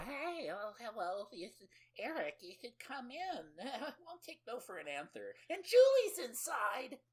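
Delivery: put-on old grandma voice. Telling a story about a scene, acting out what an old woman says as she runs out, imitating an old lady. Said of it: "Julie's old lady mother runs out".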